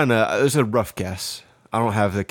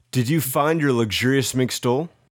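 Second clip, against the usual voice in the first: plain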